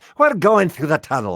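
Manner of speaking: very loud, high-pitched, booming Scottish accent. Speaker who voiced Dunbar in the UK version shows Dunbar's Scottish voice. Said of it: "He kind of talk like that".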